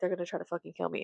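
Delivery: mock-frightened voice. Retelling what a frightened man said to him; imitating someone scared. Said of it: "He was scared for his life".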